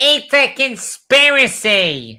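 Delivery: high, slow, mocking whine.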